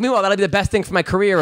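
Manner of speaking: ordinary talk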